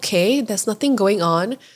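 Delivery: ordinary talk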